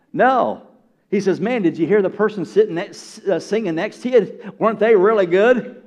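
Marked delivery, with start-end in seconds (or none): none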